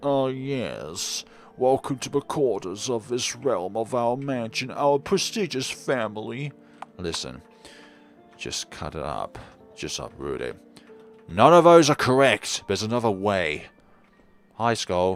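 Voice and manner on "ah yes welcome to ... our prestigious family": posh, pompous, haughty upper-class voice, drawn-out "yes". Voicing imagined game creatures welcoming visitors to their family mansion: posh, pompous voice. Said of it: "I imagine they have a posh, pompous voice".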